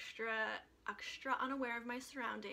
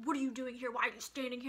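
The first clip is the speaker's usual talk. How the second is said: mock angry yelling; 5 dB louder than usual. Telling a story about getting yelled at by a bouncer, retelling a bouncer's angry yell. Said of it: "he starts like yelling at me".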